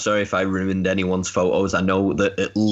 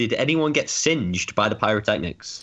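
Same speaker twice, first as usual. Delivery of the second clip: normal talking voice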